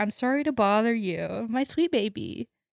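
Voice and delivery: very sad, pitiful, pathetic voice, soft and slow. Retelling a scene, quoting Mulder: sad, pathetic Mulder voice. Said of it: "Mulder has this very sad and pathetic".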